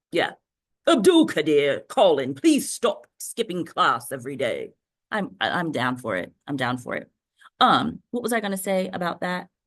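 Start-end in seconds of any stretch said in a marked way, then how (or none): 0.8-4.7 put-on grand emperor voice, swooping pitch. Calling out to students by name, in an emperor voice. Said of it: "I love my emperor voice".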